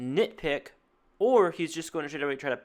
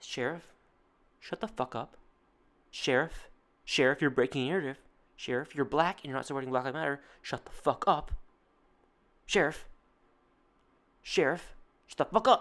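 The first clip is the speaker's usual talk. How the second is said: mocking put-on voice. Showing what the host is really saying to the sheriff: mocking imitation of the host. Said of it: "is him saying".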